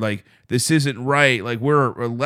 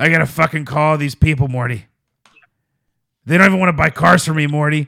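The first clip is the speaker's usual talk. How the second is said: put-on cartoon character voice, higher; 4 semitones higher, 4 dB louder than usual. Sitting at a desk near a guy who does the Morty voice, talk to him in a Rick voice. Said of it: "I'm Tiny Rick".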